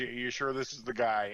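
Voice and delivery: ordinary talk, nothing marked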